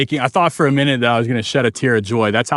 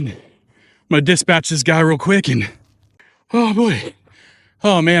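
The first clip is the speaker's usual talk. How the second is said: out of breath, winded, catching breath, slower; 3 semitones higher than usual. Fishing from a kayak right after landing a catch, speaking out of breath. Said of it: "I need a second to catch my breath".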